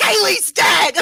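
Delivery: piercing, shrill, very high, loud yell. Voicing a character who sees a companion lying on the floor, yelling out. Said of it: "Snips is immediately gonna yell out".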